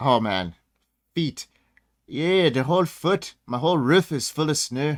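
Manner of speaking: convincing, slow, put-on Canadian accent. Answering a question about snow up there in canada: canadian accent. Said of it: "that was a good accent".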